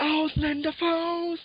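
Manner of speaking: high, slow, drawn-out yell. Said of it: "einmal ganz laut durch die ganze Location schreit".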